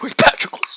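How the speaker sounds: acted-out, loud, enraged, furious voice. Acting out Achilles mad about his dead cousin: mock-furious Brad Pitt impression. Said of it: "Trying to do my uh, Brad Pitt, mad about his cousin dead".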